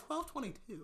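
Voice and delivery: acted-out shock. Retelling checking the time at a party, retelling shocked disbelief. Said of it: "I was shocked".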